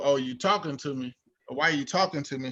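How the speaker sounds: mock sassy, snippy, attitude-laden tone. Retelling own reply to a friend's greeting: imitating own reply with attitude. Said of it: "with an attitude".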